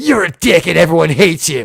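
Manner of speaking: mean, nasty tone with a mean edge. Describing how both Archers talk on the show, doing Prime Archer's mean voice. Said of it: "Prime Archer also has the mean voice".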